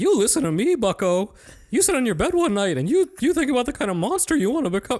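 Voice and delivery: loud, high, squeaky cartoon-mouse voice. Giving in on the podcast, the speaker does a Jordan Peterson impression. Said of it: "He just does this thing where he's like".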